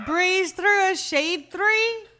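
high put-on Indian pronunciation. Imitating their grandmother, who always mixed up those words, in her Indian pronunciation. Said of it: "an actual Indian pronunciation".

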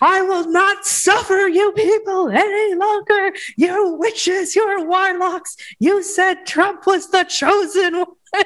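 very high, slow, dragged-out screaming. Retelling a clip of a radio host going off at QAnon people, imitating Alex Jones screaming. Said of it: "screaming at him and pointing his finger".

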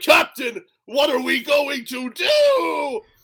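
hammy, very high, slow, swooping cartoon voice. Imitating the hammy voice acting in a parody show: hammy Scott Menville voice. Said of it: "hammy voice acting".

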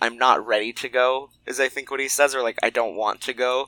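ordinary talk, nothing marked

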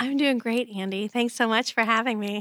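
very sincere, earnest voice. Answering how you are and thanking them for having you: very sincere voice. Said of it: "in that very sincere voice you're using".

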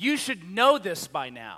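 angry fatherly scolding. Imagining how God might scold Moses, mock-angry dad voice of God. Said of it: "this angry dad voice of God going".

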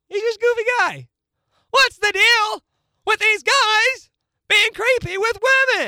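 punchy stand-up comedy delivery. Answering a remark that they sound like Jerry Seinfeld: Jerry Seinfeld impression. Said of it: "You sound like Jerry Seinfeld".

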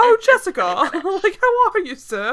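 put-on full-on British accent, high and slow. Imitating the mayor who keeps slipping: full-on British accent. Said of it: "it's a British accent, like, a full-on".

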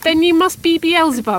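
abrupt, sudden, high blurted-out words. Narrator reads Duffy answering the laughing old bucker, blurted out. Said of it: "Duffy stood for a moment and then blurted out".

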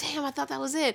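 put-on frantic freak-out. Retelling pacing after being tricked, acting out her past self freaking out. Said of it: "And I'm like freaking out".

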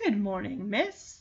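put-on soft, polite, courteous older-gentleman manner. Retelling a dog's greeting to a poodle: polite older gentleman voice. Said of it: "ever the polite older gentleman".

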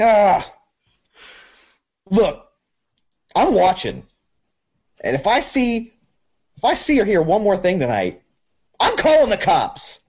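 high, sharp angry voice.

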